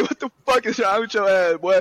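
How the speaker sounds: furious, high-pitched angry outburst. Retelling turning on a fan whose beer got all over him, reenacting being pissed off. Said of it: "I was pissed".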